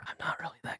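gentle ASMR whispering. A podcast host, asked to give someone ASMR, tries an ASMR whisper. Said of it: "Gotta whisper".

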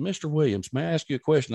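normal talking voice

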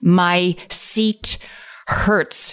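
acted, really angry, cross, sore grumbling. Telling a story, the speaker repeats what she said, mimicking a really angry voice. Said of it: "she said with this like really angry".

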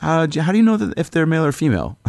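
put-on playful, very high teasing tone. Telling a story, acting out how he jokingly asked a question. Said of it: "he jokingly goes".

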